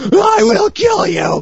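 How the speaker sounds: squeaky, very high screech. Mocking a video game's repeated quick-time event, Starkiller's squeaky screamy voice. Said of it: "In his squeaky, screamy voice".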